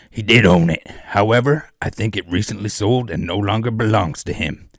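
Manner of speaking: loud, put-on evil cowboy voice. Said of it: "I'll try and do my best evil cowboy voice".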